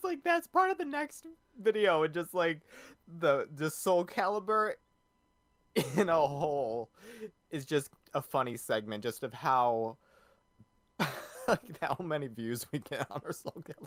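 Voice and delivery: laughing, swooping chatter broken up by laughter. Explaining to another speaker why a segment is funny: laughing while talking. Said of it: "I'm laughing because".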